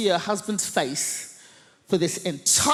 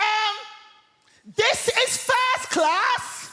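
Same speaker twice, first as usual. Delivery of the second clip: very high, shrill, drawn-out shout at top of voice; 13 semitones higher than usual. Retelling a seated woman who looks up and sees them: retelling a top-of-voice shout. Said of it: "at the top of her voice, she shouts".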